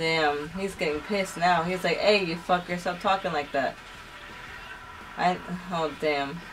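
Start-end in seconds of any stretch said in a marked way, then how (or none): none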